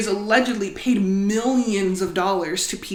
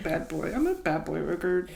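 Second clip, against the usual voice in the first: put-on sheepish embarrassment, quieter; 3 semitones lower, 8 dB quieter than usual. Showing how the record label name has to be said: mock embarrassed, sheepish. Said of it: "say it with an embarrassed, kinda sheepish".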